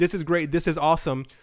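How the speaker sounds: normal talking voice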